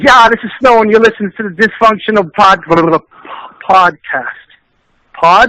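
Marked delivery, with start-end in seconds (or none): 0.0-4.5 raised, hyped, excited delivery. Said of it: "So you say".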